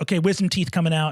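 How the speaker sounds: ordinary delivery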